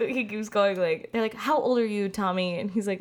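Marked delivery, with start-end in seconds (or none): none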